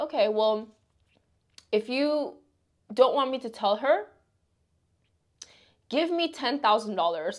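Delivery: ordinary talk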